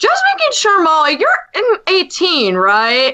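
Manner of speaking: acted out doubtful, high, swooping questioning tone. Retelling a question asked during a live stream: imitating a questioning tone. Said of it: "he had a questioning tone in his voice".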